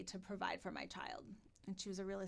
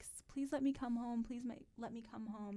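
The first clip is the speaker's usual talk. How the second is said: acted out, tearful, begging through crying; 4 semitones higher than usual. Retelling begging a parent on the phone to go home: imitating own past crying plea. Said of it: "I would cry, cry, cry and be like".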